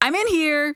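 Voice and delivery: blunt, flat-out direct, slightly high-pitched. Acting out what to say when someone knocks: acting out a very direct tone. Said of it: "in a very direct tone".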